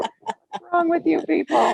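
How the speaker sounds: very high, loud shouting outburst. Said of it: "You know how you shout at the T V?".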